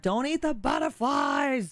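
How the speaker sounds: acted-out high call, swooping up and down. Telling a story, the speaker recalls yelling at him from across the yard; retelling a yell. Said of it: "I'm like yelling at him from across the yard".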